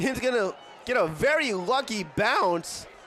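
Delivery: voice breaking and cracking mid-phrase. Play-by-play announcer calling a punt in a football game, voice cracking. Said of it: "Sorry for the voice crack".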